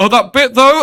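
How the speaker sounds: play-acted tearful wail, very high and loud. Retelling what she said just before she started crying again: imitating her tearful voice. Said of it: "and then just started to cry again".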